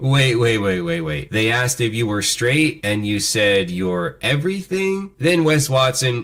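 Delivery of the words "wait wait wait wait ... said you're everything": ordinary talk, nothing marked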